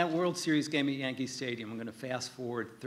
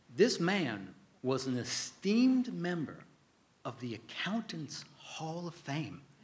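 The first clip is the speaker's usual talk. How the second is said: really bad, slow, clumsy put-on Southern drawl; 4 semitones higher than usual. Quoting Senator Sam introducing a witness, in a bad Southern accent as Senator Sam. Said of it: "excuse my really bad Southern accent".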